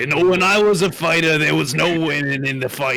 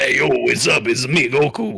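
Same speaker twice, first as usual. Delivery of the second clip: put-on casual tone in a Bronx accent; 2 semitones lower than usual. Doing a joke dub of an anime hero: Goku with a Bronx accent. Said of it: "Goku would have been a plumber in the Bronx".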